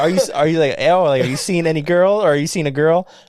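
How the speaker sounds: plain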